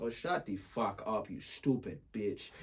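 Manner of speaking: put-on Nigerian accent in English. Recounting confusing a guy in a game, imitating a nigerian accent. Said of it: "My Nigerian just".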